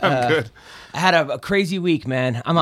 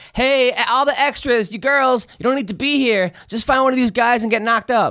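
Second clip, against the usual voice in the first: mock brash, pitched-up shout; 8 semitones higher than usual. Recounting what a woman yelled at extras on set, retelling someone yelling. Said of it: "she's yelling".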